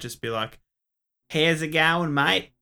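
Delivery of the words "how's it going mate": loud, unhurried, drawn-out Australian accent. Showing listeners how to recommend the show: australian accent. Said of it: "you can do your best Australian accent".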